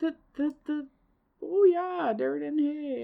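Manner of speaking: Wisconsin-accented speech. Asked by the other speaker what a Wisconsin accent is, Wisconsin accent. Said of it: "What do you think a Wisconsin accent is?".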